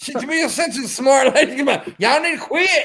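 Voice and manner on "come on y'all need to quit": put-on country drawl, pitched much higher. Retelling what a woman said, imitating a country drawl. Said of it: "She sounded so country".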